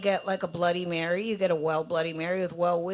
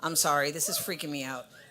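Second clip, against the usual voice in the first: plain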